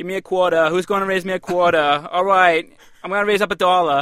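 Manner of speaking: loud, heavy, thick New York accent. Showing how someone calling bids would sound with a thick New York accent. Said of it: "if you had a thick New York accent".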